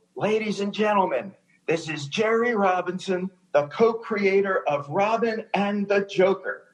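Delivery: loud yell that carries. Retelling announcing a guest at the end of the red carpet: retelling a yell. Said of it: "I just yelled".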